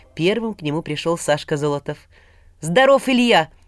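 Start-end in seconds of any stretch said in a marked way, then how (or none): 2.6-3.5 blurted, much higher. Reading a story aloud, a friend arriving at the door greets the hero: blurted out. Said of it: "с порога выпалил он".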